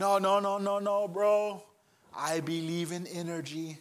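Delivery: laid-back mock Brazilian accent. Retelling a laid-back guy's reply in their chat, imitating Juma's Brazilian accent. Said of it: "I loved his Brazilian accent".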